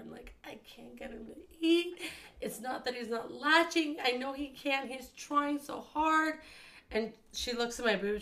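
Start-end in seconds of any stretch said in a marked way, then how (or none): 0.4-6.4 play-acted tearful, weeping, crying voice. Retelling a past visit to the doctor about the baby, imitating own crying. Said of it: "I'm like crying to the doctor".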